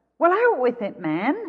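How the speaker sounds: short impatient snap. Narrator reading a rich employer snapping at his gardener, snapping impatiently. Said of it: "snapped impatiently".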